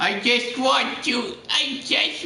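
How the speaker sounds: put-on very high, whiny little-baby voice. Talking to the camera, not wanting to turn it off, sounding like a little baby. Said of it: "I sound like a little baby".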